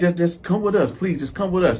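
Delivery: ordinary delivery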